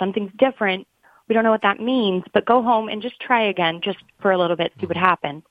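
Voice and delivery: plain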